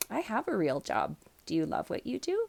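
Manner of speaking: mock dead-straight, matter-of-fact deadpan delivery. Recalling answering people who asked about a real job; retelling a deadpan reply. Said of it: "I straight deadpan would look at them".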